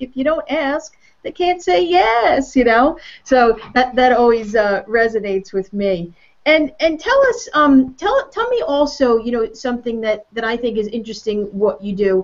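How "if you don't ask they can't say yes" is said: put-on big, heavy Texas accent, higher pitch. Retelling a speaker on stage teaching follow-up: imitating a heavy texas accent. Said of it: "with this big heavy accent and he's like".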